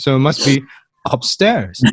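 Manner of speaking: plain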